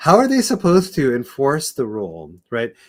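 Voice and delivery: high, loud speech through bursts of laughter. Asking another speaker how a rule could be enforced, laughing while talking. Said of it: "I can't say this without laughing".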